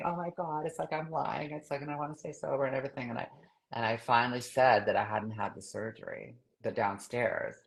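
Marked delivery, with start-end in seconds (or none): 0.1-3.1 weeping, tearful, crying voice. Retelling coming downstairs to confess again: retelling own crying. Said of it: "I come downstairs and I'm crying again".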